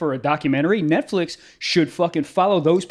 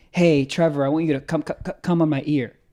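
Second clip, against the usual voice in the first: mock light half stutter; 2 semitones lower than usual. Acting out asking a partner something: mock half stutter. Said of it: "but like a half one".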